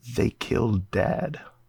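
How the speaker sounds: quiet, breathy, hushed whisper. A character presses the Wanderphone and quietly whispers to Olandi. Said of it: "quietly whispers to Olandi".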